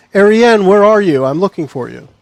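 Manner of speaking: loud shouting. Calling out in character to a friend from the shadows: shouting from the shadows. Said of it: "A shout from the shadows".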